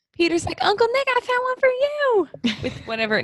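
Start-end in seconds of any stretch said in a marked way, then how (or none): 0.6-2.6 put-on very high, slow cartoon kid voice, "you" stretched out. Retelling a family gift-opening scene, voicing a nephew's line in a Cartman voice. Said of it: "Now I just try to do a Cartman accent".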